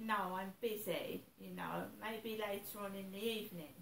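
ordinary talk

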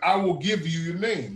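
plain

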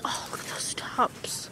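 soft, hushed whisper under the breath.

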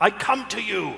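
yelling out loudly. Voicing a character stepping forward to his death, yelling out. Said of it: "And he yells out".

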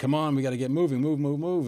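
loud, fast, aggressive and pushy voice.

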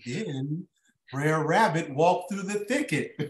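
put-on soft, soft-spoken narrating voice. Recall the guy on tv who talked while painting, imitating a tv painter's soft voice. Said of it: "And he had that soft voice".

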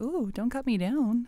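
happy tree voice. Voicing a tree while drawing with others: happy tree voice. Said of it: "that's what a happy tree would sound like".

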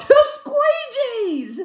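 high, loud, slow yell. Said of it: "I yell in the checkout aisle".

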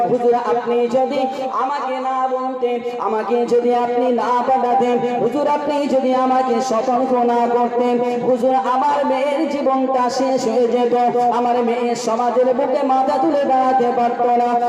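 ordinary delivery

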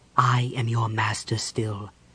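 soft, hushed, firm, unyielding tone. A man addresses the orb in his hands, softly but firmly. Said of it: "he spoke softly but firmly".

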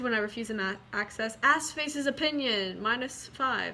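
ordinary talk

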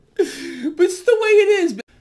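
high, loud laughing through the words. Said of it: "I'm sorry I'm laughing".

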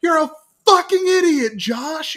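shrill, very high-pitched, loud yell. Retelling a game gone wrong, imitating Bren shouting. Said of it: "you just hear Bren shout".

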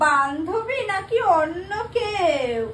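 tearful, teary voice.

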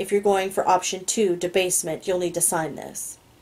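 ordinary delivery, nothing marked

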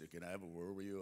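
really deep put-on voice, dropped way down. Retelling what a man said, imitating his really deep voice. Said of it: "a really deep voice".

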